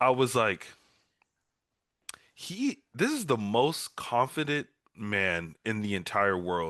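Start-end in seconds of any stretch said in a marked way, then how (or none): none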